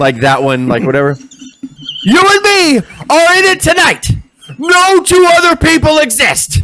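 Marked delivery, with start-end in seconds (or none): 2.0-6.6 way over-the-top promo voice, pitched very high. Doing an impression of Ric Flair. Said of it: "that's my Flair".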